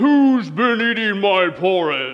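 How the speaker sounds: roaring papa bear voice.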